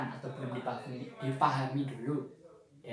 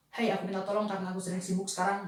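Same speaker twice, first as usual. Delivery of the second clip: rushed, hurried, high delivery rattled off quickly; 6 semitones higher than usual. Teacher shows children a request said too fast: quick, hurried request. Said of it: "dengan intonasi yang cepat seperti ini".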